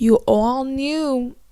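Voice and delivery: put-on New York accent slipping in, unplanned. Recapping a show, quoting an anonymous message sent to a character: accidental New York accent. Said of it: "Why did I get a New York accent?".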